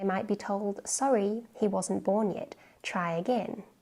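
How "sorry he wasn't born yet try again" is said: normal talking voice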